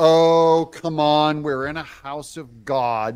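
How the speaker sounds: slow, sarcastic, fake-sounding drawl. Mocking what Letitia James said to hecklers: imitating Letitia James sarcastically. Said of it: "that was sarcastic and fake".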